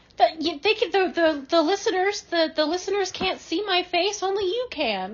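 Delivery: voice cracking in distress. Complaining to the other speaker about a disgusting story: voice cracking in distress. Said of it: "They can hear your voice cracking in distress".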